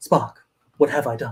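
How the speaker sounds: low, distinctive put-on voice. Retelling the scene where the ship crashes: Shatner voice. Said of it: "that only Shatner voice where he's like".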